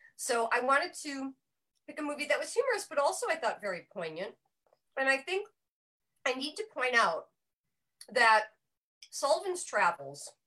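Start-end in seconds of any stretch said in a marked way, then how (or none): 5.0-10.3 loud, halting, broken-up words while chewing. Speaker introducing a film pick while chewing a vitamin: talking while chewing. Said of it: "I have a vitamin in my mouth, so I'm chewing".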